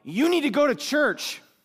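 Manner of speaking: high, yelled call, mocking. Recounting a man who yelled at him while he kept walking, retelling a yell. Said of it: "He yelled".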